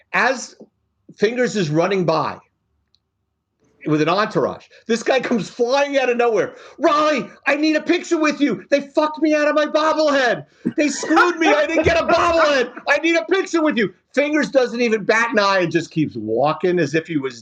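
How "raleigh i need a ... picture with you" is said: high, pitched-up yell. Retelling a fan demanding a picture with Fingers: imitating a man yelling. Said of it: "if you don't yell at me like the last guy did".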